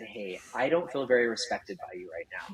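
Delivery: discreet, soft, hushed half-whisper under the breath. Retelling what was said to a friend on set: imitating own quiet half-whisper. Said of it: "came up to him real quietly and I said".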